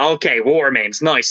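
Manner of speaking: ordinary talk, nothing marked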